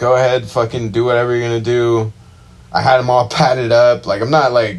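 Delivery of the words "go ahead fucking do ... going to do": plain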